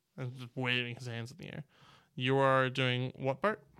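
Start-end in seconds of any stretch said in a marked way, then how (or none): none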